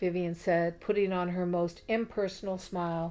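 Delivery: ordinary delivery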